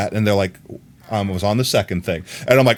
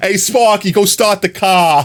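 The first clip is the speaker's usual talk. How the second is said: put-on Boston or New York accent; 8 semitones higher, 3 dB louder than usual. Speaker imitates Fred, someone their dad knows, imitating Fred's Boston-New York accent. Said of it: "He has a Boston, New York accent".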